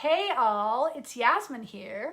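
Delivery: put-on American accent, slow and drawn out. After asking permission, the speaker greets everyone in a put-on American accent. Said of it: "another quick American accent".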